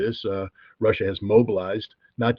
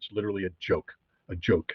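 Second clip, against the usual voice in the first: ordinary talk, nothing marked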